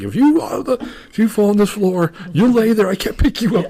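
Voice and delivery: acted out, very shrill, very high, furious angry yell. Retelling how a man yelled at him while he slid down the bathroom wall: retelling someone screaming. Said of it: "He's screaming at me".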